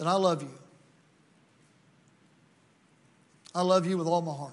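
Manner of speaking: tender, gentle declaration. A preacher addressing the congregation this morning, tenderly. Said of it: "can I say this morning tenderly".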